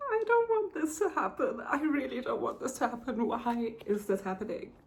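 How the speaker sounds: tearful, crying while talking. An emotional reader reacting to a book on camera, crying while talking. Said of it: "look at me already crying".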